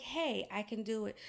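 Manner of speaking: ordinary delivery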